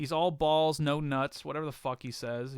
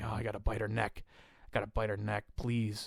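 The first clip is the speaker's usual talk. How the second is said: put-on lustful wrestler voice, lower and quieter; 5 semitones lower, 4 dB quieter than usual. Retelling a wrestling match, imitating Kevin Thorne, really horny. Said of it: "he's like".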